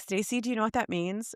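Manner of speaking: plain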